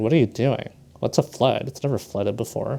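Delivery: ordinary talk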